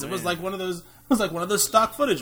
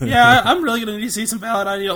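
normal talking voice

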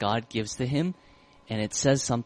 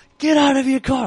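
shrieking full-blast shout, very high, very loud, angry; 14 semitones higher, 11 dB louder than usual. Telling how a driver she honked at pulled over and got out: retelling a yell. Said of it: "he's like yelling".

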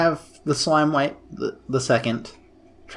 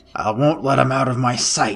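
put-on loud stage whisper. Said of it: "whispers to Fred very loudly".

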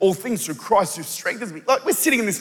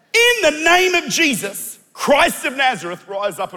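put-on high, loud, slow, stretched-out shouting; 6 semitones higher, 6 dB louder than usual. Retelling a story and acting out the command to rise and walk, yelling it. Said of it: "I know I'm yelling".

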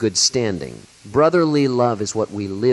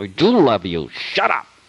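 grudging affection, forced, rising, through gritted teeth. Speaker shows how forced love comes out, saying it through gritted teeth. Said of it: "this gritted teeth kind of loving".

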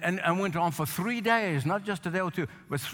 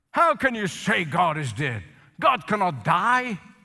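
loud, stern, indignant put-on voice; 6 dB louder than usual. Retelling how a startled man answered a woman's news of a death, mock-stern, indignant. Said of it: "sternly said to her".

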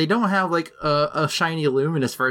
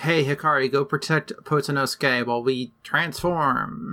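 usual speaking voice

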